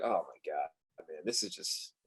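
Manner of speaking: low, slow, quiet defeated groan, dragged out. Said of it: "I was like".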